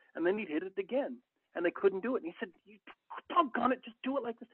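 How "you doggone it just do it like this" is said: play-acted, higher, furious, frustrated screaming. Retelling how he screamed at the players, imitating an infuriated scream. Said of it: "he was getting infuriated and screaming".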